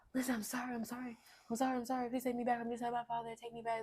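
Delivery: mock tearful bawling voice. Retelling what an ex-partner said outside the home: imitating a man bawling and pleading. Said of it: "manipulated, bawling his eyes out".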